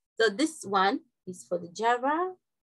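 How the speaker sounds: slow, deliberate, slowed-down delivery. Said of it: "I'll slow down".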